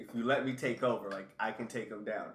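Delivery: plain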